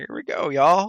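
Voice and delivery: put-on cowboy voice. Recalling picturing a Disney ride, the speaker imagines a cowboy saying the line, cowboy voice. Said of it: "picturing like a cowboy being like".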